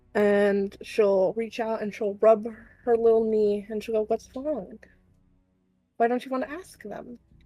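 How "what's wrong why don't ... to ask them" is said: voice brought down a touch, soft, lowered. Voicing Mail as she speaks to Dottie, in a lowered voice. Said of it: "Mail will lower her voice a bit".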